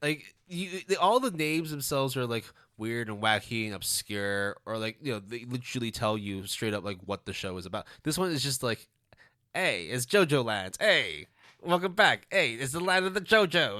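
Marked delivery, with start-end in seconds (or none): 9.5-13.8 put-on New York accent, loud and high. Joking about a show's name, announcing it in a new york accent. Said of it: "I don't know why I'm doing a New York accent".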